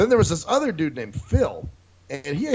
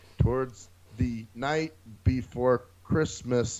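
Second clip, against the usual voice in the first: flat, dead-level monotone with zero inflection; 4 semitones lower, 6 dB quieter than usual. Retelling a talent show reading of a poem: imitating a flat reading without inflection. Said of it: "Jaws has more inflection than this fucker".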